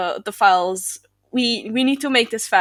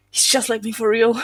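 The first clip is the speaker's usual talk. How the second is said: quiet whisper, as if to oneself. Voicing a character turning to the knight: whispering to himself. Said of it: "so whispers to himself and goes".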